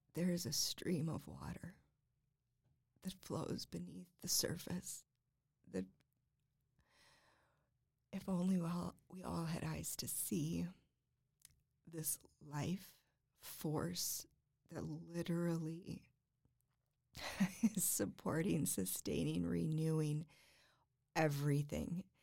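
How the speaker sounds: trying not to cry, holding back tears. Describing what helps them envision God, holding back tears. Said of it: "I'm trying not to cry".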